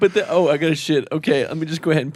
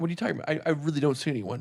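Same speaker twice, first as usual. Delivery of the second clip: put-on quick, deadpan, low-key delivery; 8 dB quieter than usual. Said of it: "he just so quick about it and so just".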